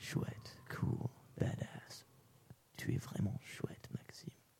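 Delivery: soft, slow, proud whisper. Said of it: "My dad smiles at me".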